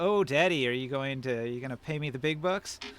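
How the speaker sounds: schmoozing, buttering-up, sweet-talking coaxing tone. Voicing a character who schmoozes him to get paid: schmoozing. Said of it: "she is going to schmooze him and say".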